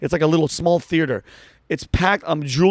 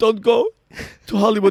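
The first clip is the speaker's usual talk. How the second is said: mock crying, tearful voice, higher pitch; 5 semitones higher than usual. Retelling mom's reaction to the news of the show: imitating mom crying.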